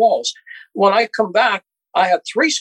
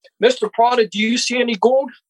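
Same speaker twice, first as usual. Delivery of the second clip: heated, confrontational, high, demanding voice; 5 semitones higher than usual. Retelling a confrontation in front of agents: retelling yelling at him. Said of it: "And I'm yelling at him".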